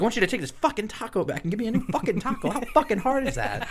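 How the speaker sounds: very high, furious, snapping, totally snapped outburst. Retelling snapping back at a woman over a taco order, retelling snapping angrily. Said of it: "so I completely snapped myself".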